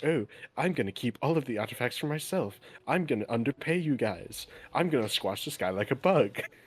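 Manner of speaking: snide, taunting put-on stage whisper. In a role-play game, a masked character mocks the woman, whispering, imitating the woman. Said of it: "I'm whispering it to".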